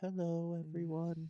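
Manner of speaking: put-on little old lady voice. Retelling how a lecturer's wife greeted everyone, Tammy Peterson's little old lady voice. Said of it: "This is how she talked for real".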